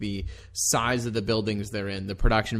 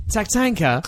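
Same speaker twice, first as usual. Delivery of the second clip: put-on posh British accent, higher and louder; 11 semitones higher, 5 dB louder than usual. Greeting the hosts with one word: Lord Alfred Hayes impression. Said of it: "my Lord Alfred Hayes impression".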